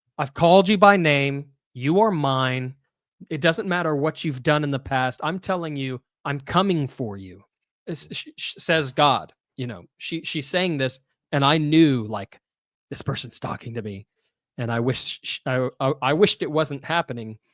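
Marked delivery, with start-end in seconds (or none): 0.2-7.4 put-on loud voice. Recounting a woman's words to the speaker, retelling a loud voice. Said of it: "in a loud voice says".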